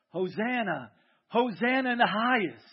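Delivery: very slow, loud, drawn-out rejoicing crowd shout. Retelling how the crowd called out to Jesus: imitating a crowd shouting. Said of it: "They're shouting".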